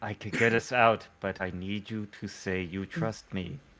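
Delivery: quiet whispering. Speaking into a one-way mental connection to a companion: whispering. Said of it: "I'll whi- I'll whisper in".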